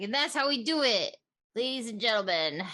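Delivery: boastful, bragging character voice. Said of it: "she's like".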